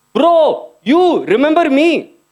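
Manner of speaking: mock, very slow, high, drawn-out yell. Retelling a stranger at a bar calling out: imitating a man screaming. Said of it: "points at me and screams".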